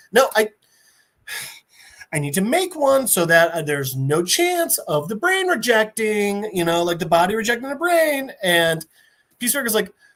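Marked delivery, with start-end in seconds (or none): none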